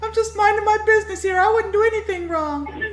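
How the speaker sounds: very high, innocent-sounding dog voice. Asked to do it again, voicing the innocent dog: Topaz voice. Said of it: "That's the Topaz voice. Go ahead, do it".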